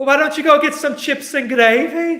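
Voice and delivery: very high, very loud, shrill put-on Birmingham accent. Responding to someone from Birmingham, attempted Birmingham accent. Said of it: "I don't know if that was a good Birmingham accent".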